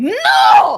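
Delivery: very loud, high, raging, enraged shout. Voicing a character who breaks into a rage: enraged shout. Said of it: "she breaks into a fucking rage".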